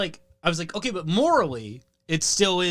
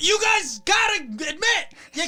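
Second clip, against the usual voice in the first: put-on very high, squealing, drunken yell; 13 semitones higher than usual. Recalling yelling at everyone in a Jimmy John's while drunk; retelling a drunk scream. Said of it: "I'm just screaming like".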